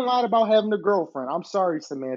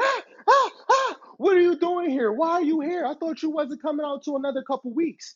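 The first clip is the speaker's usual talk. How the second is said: shrill, very high yelping screams; 9 semitones higher than usual. Retelling the moment a roommate was woken, imitating a roommate screaming. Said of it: "And he's screaming".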